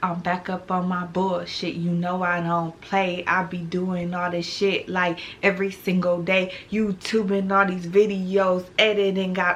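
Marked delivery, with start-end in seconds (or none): none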